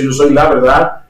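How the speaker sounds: ordinary delivery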